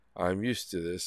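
nonchalant robot-like voice. Retelling what a woman answered him: imitating a nonchalant robot-like voice. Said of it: "almost like a robot".

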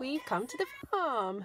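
voice breaking and cracking. Announcing arrival at the farm: voice cracking. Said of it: "my voice just broke".

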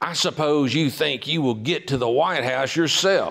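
put-on angry voice, snapped out sharply. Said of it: "I just made that voice up".

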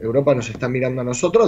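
ordinary delivery

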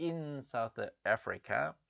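"in" hit hard, "South Africa" said plain. Explaining how a news line was read aloud, stress on in. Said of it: "그 장소를 강조해주기 위해서 in 이렇게 강조해서 읽었죠".

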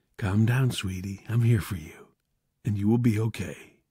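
softly whispering. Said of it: "whispered to her softly".

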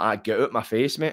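plain

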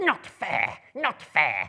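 very loud, very high hissing creature voice. A narrator reads Gollum's protest at Bilbo's question in a hissing Gollum voice. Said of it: "he hissed".

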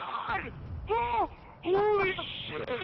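ear-splitting scream at full blast.

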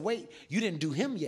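ordinary talk, nothing marked

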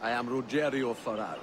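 loud, laid-on put-on Italian accent. A game character introduces himself while in disguise, with an Italian accent. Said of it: "his Italian accent".

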